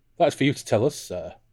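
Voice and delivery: lightly amused tone. Willem de Verk replies to Toza's challenge, with some amusement. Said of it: "said with some amusement in his voice".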